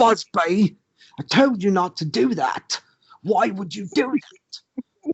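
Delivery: put-on rude British accent, bee voice. Describing a show, speaker imitates the cartoon bees talking in a British accent. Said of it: "they would talk in this British accent".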